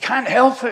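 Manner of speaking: high, loud, excited protesting tone.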